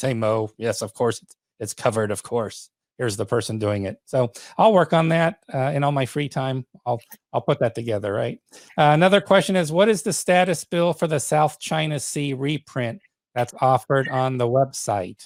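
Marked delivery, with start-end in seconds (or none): 0.0-4.0 put-on, deep, lowered voice. Joking about sounding like he knows what he's doing, the speaker answers mo in a deeper voice. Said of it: "I could talk with a deeper voice".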